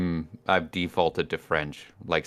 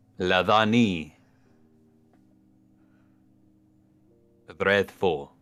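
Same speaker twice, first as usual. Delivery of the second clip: put-on Transylvanian accent. Saying a name back after a greeting: put-on Transylvanian accent. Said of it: "I don't even know what accent that was. I think Transylvanian?".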